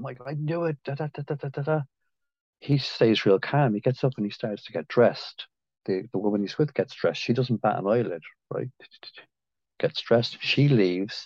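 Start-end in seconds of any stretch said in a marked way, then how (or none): 0.0-1.8 put-on histrionic voice, higher and quieter. Retelling a scene where a wife catches her husband cheating: imitating a histrionic wife. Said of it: "she's histrionic".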